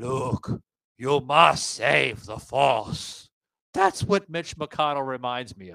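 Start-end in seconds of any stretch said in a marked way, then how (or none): 0.0-3.3 very slow, drawn-out sci-fi mentor voice. Comparing a politician to a Star Wars character: Star Wars Jedi Master voice. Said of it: "The Jedi Master".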